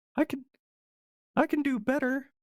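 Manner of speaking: high-pitched mouse voice.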